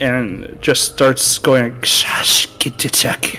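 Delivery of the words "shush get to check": hissing creature voice, slower. A game master voices a restrained, wounded captive hissing at the players. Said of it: "it kind of looks at you and hisses".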